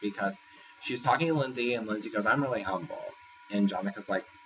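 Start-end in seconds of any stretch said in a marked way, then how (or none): none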